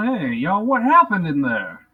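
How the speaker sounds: loud, booming, belted big heroic cartoon voice. Asking the rescued cultists what happened, in a He-Man voice. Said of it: "my He-Man voice".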